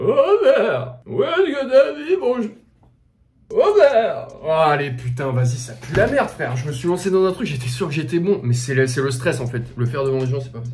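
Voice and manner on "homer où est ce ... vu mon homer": put-on very high, very slow, swooping, drawn-out cartoon grandpa voice. Showing which Simpsons voice he likes doing after skipping Homer: Abraham Simpson voice. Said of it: "Abraham, c'est ça, le grand-père?".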